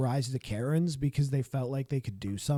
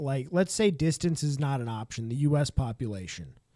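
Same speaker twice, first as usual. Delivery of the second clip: ordinary talk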